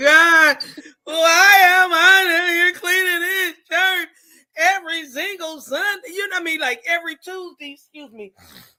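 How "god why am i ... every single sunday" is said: put-on very loud tearful sobbing wail. Retelling complaints while cleaning the church: imitating past crying. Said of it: "we would be down there crying like".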